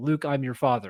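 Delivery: ordinary talk, nothing marked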